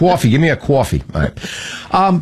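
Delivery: put-on New York accent. Told to talk like a New Yorker, the speaker demands coffee in a New York accent. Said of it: "Talk like a New Yorker".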